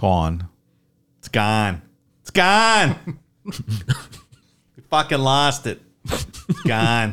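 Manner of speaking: put-on swooping Boston accent, words hammered repeatedly. Reacting to news the evidence was lost, a speaker talks in a mock Boston accent. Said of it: "That Boston accent".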